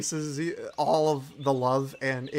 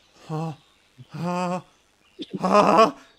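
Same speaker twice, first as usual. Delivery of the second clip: panicked, anxious gasping, higher and louder; 4 semitones higher, 7 dB louder than usual. Voicing a character in the corner: panicked hyperventilating. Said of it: "he's starting to hyperventilate".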